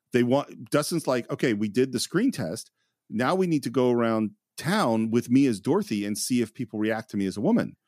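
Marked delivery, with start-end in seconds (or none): none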